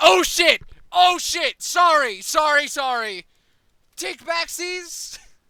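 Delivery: put-on panicked tone. Picturing the villain regretting the kill: mock panicked apology. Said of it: "But then it's like".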